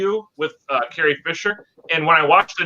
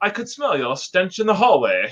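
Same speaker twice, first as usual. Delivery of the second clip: put-on, laid-on-thick British accent; 2 semitones higher than usual. Quoting a film line in the way the actress delivered it: Leia's put-on British accent. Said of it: "she tried to do a British accent".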